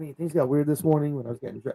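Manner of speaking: hushed, very quiet, under-the-breath delivery. Retelling a wrestler's one-liner from a promo: imitating a quiet aside. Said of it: "And really quietly".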